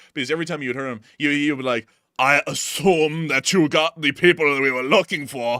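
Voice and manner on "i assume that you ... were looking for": put-on loud, slow, laid-on Austrian accent. Quoting a voice actor whose accent amused the speaker, in an Arnold Schwarzenegger-like accent. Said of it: "because of his accent. Like it was the it was the closest thing to Arnold Schwarzenegger".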